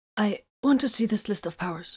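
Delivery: timid, meek, small little voice. The Inquisitor, after the commander's stare, in a meek little voice. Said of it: "he finally managed in a meek little voice".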